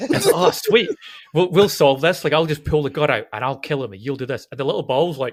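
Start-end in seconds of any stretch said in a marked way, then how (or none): none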